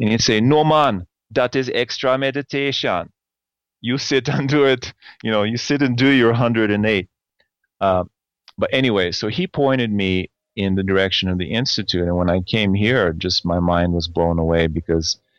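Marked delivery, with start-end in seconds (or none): 0.4-7.1 bad, put-on Jamaican accent. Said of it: "I'm gonna butcher his accent".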